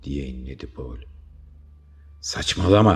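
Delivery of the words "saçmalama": very loud, high-pitched shout. Narrator reads a character shouting at a companion who wants to stop, shouting. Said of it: "diye bağırdı Toza".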